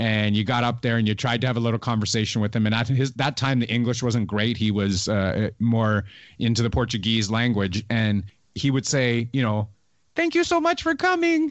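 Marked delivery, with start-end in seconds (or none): 10.1-11.5 voice pushed very high, very high-pitched. Retelling what a fighter said when meeting fans: Anderson Silva high-pitched voice. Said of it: "in that high-pitched voice".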